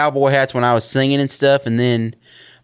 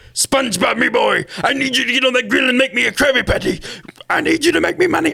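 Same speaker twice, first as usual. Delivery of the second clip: very high, creaky, gritty cartoon character voice; 10 semitones higher than usual. Showing off voice-acting impressions, doing a Mr. Krabs voice. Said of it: "I can do some pretty good impressions of Patrick and Mister Krabs".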